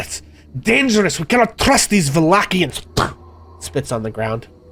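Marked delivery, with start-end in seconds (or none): 0.0-2.8 angry, higher-pitched scolding, laying into someone. Voicing a father who confronts his daughter: angrily scolding. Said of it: "laying into her".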